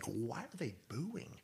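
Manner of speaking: very quiet, soft whisper, barely voiced. Retelling whispering a question to a colleague while mics were live: retelling a whisper. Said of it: "so I'm whispering to Sam Roberts".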